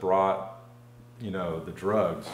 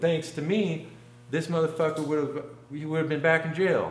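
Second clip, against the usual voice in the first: high-pitched put-on woman's voice. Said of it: "she interrupts the story and goes".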